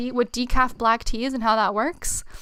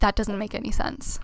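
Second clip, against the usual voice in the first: put-on muttering, half under the breath. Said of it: "half under his breath".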